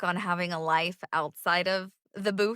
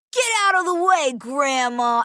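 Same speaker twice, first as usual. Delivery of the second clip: put-on high, loud voice of a small young boy; 7 semitones higher, 8 dB louder than usual. Voice actor showing how fast audition voices switch, in a little boy voice. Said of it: "going into a little boy voice".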